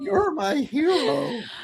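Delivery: very high voice, cracking on the words. Retelling a nervous first line to a celebrity: imitating a voice cracking. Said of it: "she leads with her voice cracking".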